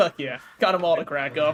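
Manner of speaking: ordinary talk, nothing marked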